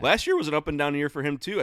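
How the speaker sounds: voice cracking and breaking mid-sentence. A host talking with a co-host, voice cracking. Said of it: "I think my voice just cracked".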